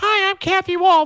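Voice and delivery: put-on high-pitched helium voice. Retelling the end of a campaign ad: Kathy Wall's high-pitched helium voice.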